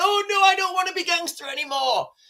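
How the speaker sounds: small, high, scared and fearful voice. Mocking fighters who drop to the ground under gunfire: mock scared voice. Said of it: "they're scared".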